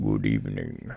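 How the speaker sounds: put-on vampire voice, very low and creaky. During game commentary, announcing the switch first, greeting in vampire voice. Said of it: "in Vampire Voice".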